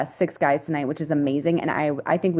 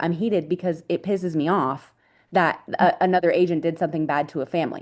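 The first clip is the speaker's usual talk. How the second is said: usual speaking voice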